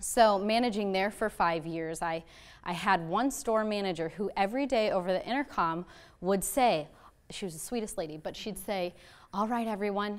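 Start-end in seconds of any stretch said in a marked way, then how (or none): 9.3-10.2 extremely soft, hushed, quiet voice. Retelling a store manager's daily intercom greeting, imitating a very soft voice. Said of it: "in the softest voice ever".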